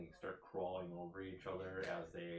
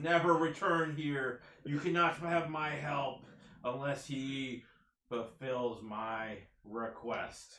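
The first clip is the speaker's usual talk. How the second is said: high screeching shriek; 7 semitones higher, 12 dB louder than usual. A narrator voices a woman's parting words as the players leave, screeching. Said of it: "She screeches as you leave".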